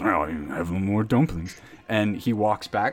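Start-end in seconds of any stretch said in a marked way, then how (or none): 0.0-1.6 grumpy, put-upon, low grumbling complaint. Voicing a man in a cloak giving in about more dumplings: grumbling. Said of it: "he kind of grumbles".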